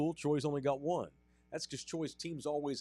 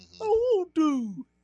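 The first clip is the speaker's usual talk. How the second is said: shrill crying whine, very high, loud and slow; 10 dB louder than usual. Imitating Patrick Mahomes ranting: Patrick Mahomes high-pitched whine. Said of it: "he has that high-pitched voice".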